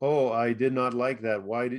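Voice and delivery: ordinary delivery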